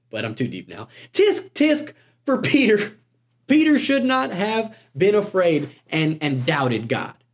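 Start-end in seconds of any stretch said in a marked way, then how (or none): 1.1-7.1 put-on high-pitched, disapproving, tut-tutting country accent. Imitating finger-wagging churchgoers judging Peter: imitating churchgoers in a country accent. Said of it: "they're in a country accent".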